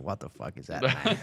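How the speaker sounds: full nature-documentary narrator voice. Retelling documentary outtakes where Morgan Freeman flubs lines: Morgan Freeman voice. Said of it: "Morgan Freeman when he, like, got the lines wrong".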